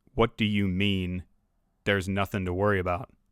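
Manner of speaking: heavy, deep-register voice pitched low. Retelling what Mister Smith said back to the intel guy, in Mister Smith's deep voice. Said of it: "Mister Smith had this deep voice".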